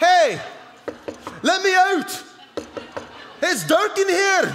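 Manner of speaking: very high, drawn-out put-on Scottish accent. Retelling the voice heard from the casket at the funeral, in a put-on Scottish accent. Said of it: "I was like a Scottish accent, wasn't it?".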